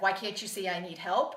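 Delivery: ordinary talk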